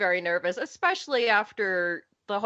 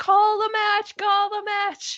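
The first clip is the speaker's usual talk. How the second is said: put-on, shrill, high-pitched screaming; 12 semitones higher, 3 dB louder than usual. Recalling overcompensating while watching an injury on TV; retelling screaming at the television. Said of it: "I'm just screaming at the television".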